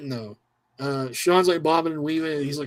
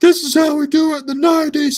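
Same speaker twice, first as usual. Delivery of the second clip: very high, loud, heated wrestler yell; 12 semitones higher, 8 dB louder than usual. Retelling a wrestling match: imitating Diesel yelling. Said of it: "yelling at Jose Lothario".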